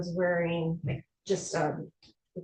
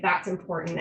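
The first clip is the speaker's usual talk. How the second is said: usual speaking voice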